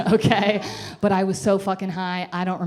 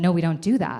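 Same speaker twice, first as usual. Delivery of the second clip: put-on dismissive tone. Retelling the nurse's reply to a request to see the psychiatrist: imitating a dismissive tone. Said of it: "this dismissive tone".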